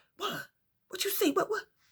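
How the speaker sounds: breathy, very quiet whispered voice. Retelling a friend's phone call, asking what she saw: retelling own whispering. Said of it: "she got me whispering too".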